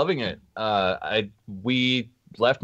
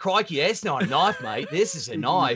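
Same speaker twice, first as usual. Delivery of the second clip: put-on Aussie outback movie-hero voice; 4 semitones higher than usual. Showing off a knife gift: Crocodile Dundee voice. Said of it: "Is your motherfucking Crocodile Dundee?".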